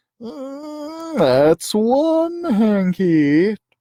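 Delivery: whining, complaining cat voice. Narrator reading a familiar voice calling out from the north, whiny voice. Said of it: "whiny voice say".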